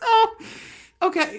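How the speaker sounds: high, loud laughing to tears.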